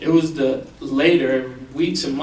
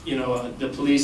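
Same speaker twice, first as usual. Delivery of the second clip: ordinary delivery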